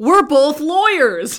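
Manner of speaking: loud, booming, shrill, high-pitched screaming. Retelling a scene with a lawyer, imitating Bruce Campbell screaming.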